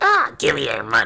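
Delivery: put-on loud, rough, old-timey movie bully voice. Retelling a scene as a 1940s high school movie: imitating a 1940s movie bully. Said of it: "like they were in a nineteen forties high school movie".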